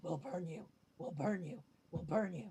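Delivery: dark ominous whisper. Using thaumaturgy, a player makes a voice repeat thirty feet out: Zaya's dark ominous whisper. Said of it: "whisper over and over, real like dark and ominous".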